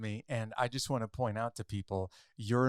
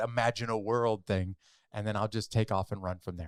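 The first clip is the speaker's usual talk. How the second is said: ordinary talk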